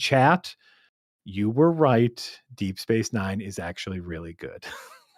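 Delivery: quiet, hushed, confidential voice under the breath. Admitting something so not all of chat hears: talking quietly. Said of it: "I'm gonna talk quietly".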